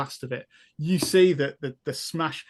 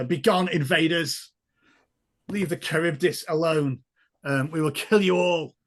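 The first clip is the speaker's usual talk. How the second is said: octopus-like sea creature voice; 2 semitones higher than usual. Voicing an octopus speaking into the players' heads: octopus creature's voice. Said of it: "you hear a voice in your head".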